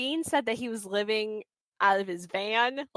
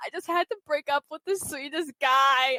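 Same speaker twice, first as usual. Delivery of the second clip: put-on tearful, sobbing, crying speech; 4 semitones higher than usual. Retelling a tv scene, quoting her as she walks away: imitating someone crying.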